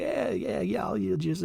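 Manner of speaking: terrible put-on voice, hushed, creaky, mumbled. Retelling how a president played along with a joke: terrible Bill Clinton impression. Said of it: "That's a terrible Bill Clinton impression".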